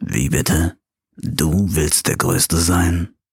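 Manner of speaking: giant dinosaur rumble, voice dropped deep and big. Narrating a dinosaur joke as the T-Rex challenges the iguanodon, in a deep voice. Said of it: "fragt mit tiefer Stimme".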